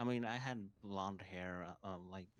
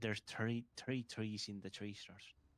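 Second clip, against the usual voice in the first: mocking put-on Irish accent. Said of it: "they say thr-".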